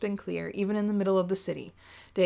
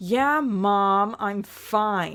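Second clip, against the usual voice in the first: very slow sarcastic drawl with mom drawn out; 4 dB louder than usual. Brushing off a companion's worried check-in, calling him Mom, sarcastic reply. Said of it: "that was me being sarcastic".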